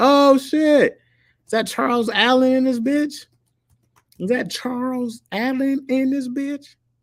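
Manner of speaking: mock surprised, very high, loud hype shout.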